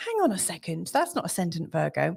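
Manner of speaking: ordinary talk, nothing marked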